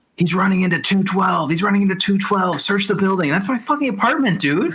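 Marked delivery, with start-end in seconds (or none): 0.2-3.3 shouted, yelled radio dispatcher voice. Retelling what the police scanner said: imitating police scanner yelling. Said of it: "the police scanner is yelling".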